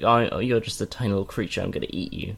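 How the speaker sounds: ordinary delivery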